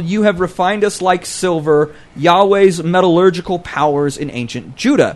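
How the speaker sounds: ordinary delivery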